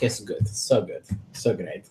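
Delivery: sarcastic, ironic tone meaning the opposite. Reacting to a bad saving throw roll: sarcastic.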